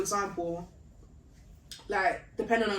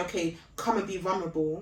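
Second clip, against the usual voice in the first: normal talking voice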